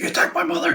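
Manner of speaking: mock loud, furious screaming in rage. Retelling a film fight scene, imitating someone screaming. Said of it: "he's like screaming at him like".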